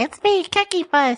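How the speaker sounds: very high-pitched, slow, drawn-out character voice. Imitating a mascot from memory: high-pitched Cookie Puss voice. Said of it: "with his high-pitched voice".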